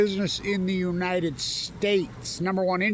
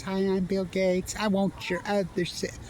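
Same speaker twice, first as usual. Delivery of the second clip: put-on passive-aggressive voice, slower. Showing how passive-aggressive monsters talk, the speaker puts on a passive-aggressive Bill Gates voice. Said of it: "these passive aggressive and they talk like this".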